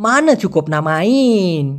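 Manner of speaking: stretched, dragging, drawn-out phrasing. Describing how they say phrases with a pull: long drawn-out drawl. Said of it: "এইভাবে টান দিয়ে বলে".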